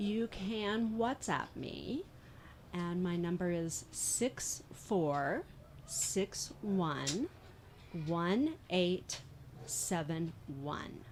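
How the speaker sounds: very slow, clear, deliberate readout, each digit separate.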